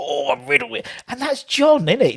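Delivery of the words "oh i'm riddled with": put-on Cockney accent. Retelling a Mickey Flanagan comedy skit: Mickey Flanagan Cockney impression. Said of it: "he's so Cockney it hurts".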